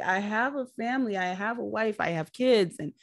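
put-on pleading voice. Retelling a scene where a man at gunpoint is pleading: imitating Nick pleading. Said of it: "he's pleading for his life".

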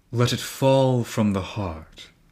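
speaking as a man. Narrating a story, a mouse on someone's shoulder speaks up, in a man's voice. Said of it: "in a man's voice".

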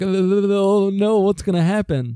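acted high, scared, teeth-chattering voice, "oh" drawn out. Describing how everyone else reacts to the bullhorn, acting out teeth-chattering fear. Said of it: "teeth chattering".

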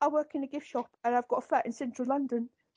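attempted fake British accent. Showing how a man talks, in an attempted british accent. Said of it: "His idea of doing a British accent".

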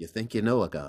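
cartoon-style meerkat character voice. Retelling a rehearsal, delivering the line to the audience: Timon voice. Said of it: "Timon looks at the audience and he goes".

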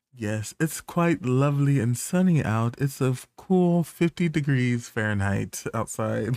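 fake, proper, formal put-on phone voice.

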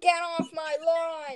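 put-on 80-year-old man voice. Joking about how 80-year-old men talk, in an 80-year-old man voice. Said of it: "Like when 80-year-old men go".

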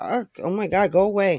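plain

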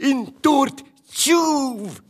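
very high, piercing, shouted yell. Reading a character's cry in a children's detective story, shouted. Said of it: "Ropa Bubba".

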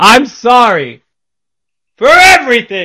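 exaggerated mock apologetic tone, high and slow.

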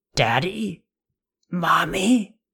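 hoarse, high croak, on the verge of tears. A daughter calls to her unresponsive parents in a vehicle, croaking, holding back tears. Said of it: "she croaked, trying not to cry".

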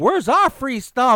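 put-on high, griping, complaining yell. Ranting about complainers on the news, imitating people yelling. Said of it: "all yelling and everything".

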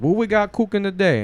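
Cajun accent impression. Retelling how a cook on TikTok opens his video: imitating a Cajun TikTok cook. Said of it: "he's a Cajun guy, and he's like".

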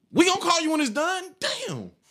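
put-on high, swooping, snippy, rude old lady voice. Recounting waiting on an order at Captain D's, imitating an old lady. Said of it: "This old lady looked at me and said".

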